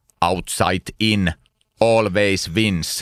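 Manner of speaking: put-on very slow, deliberate Finnish accent, drawn way out. Quoting what engineers in Finland say, in a Finnish accent impression. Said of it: "Is that his Finnish impression? ... that's his Finnish outside in".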